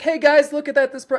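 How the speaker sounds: hyped, excited video-host voice, pitched very high. Showing the way they'd talk in their videos, excited video-host voice. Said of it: "I'm excited and my my tone goes up".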